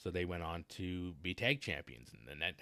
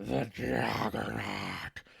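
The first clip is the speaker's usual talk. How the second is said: booming, rough, huge bellow with hyped-up energy; 4 semitones higher, 8 dB louder than usual. Imagining a manager introducing a wrestler: Paul Heyman impression. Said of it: "I can just hear Paul Heyman".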